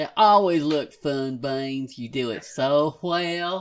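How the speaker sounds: put-on very strong Southern hillbilly accent. Speaking to beans in character, in a very southern accent. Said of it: "very southern".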